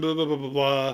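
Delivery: normal talking voice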